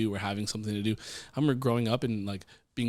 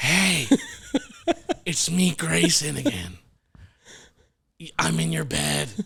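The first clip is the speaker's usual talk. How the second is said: loud, high, sing-song would-be whisper at full voice; 7 semitones higher, 6 dB louder than usual. Retelling how Grayson talks to another kid in a dead-quiet room, imitating his loud whisper. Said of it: "he doesn't know how to whisper".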